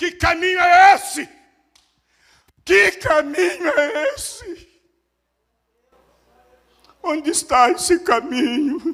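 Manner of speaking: very high, desperate, drawn-out shouting cries. Retelling how she shouted inside the house: imitating someone shouting. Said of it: "Gritando dentro de casa".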